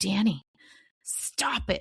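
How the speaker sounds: through clenched teeth. Recalling telling someone on the court to stop it, retelling talking through teeth. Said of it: "I would be talking through my teeth".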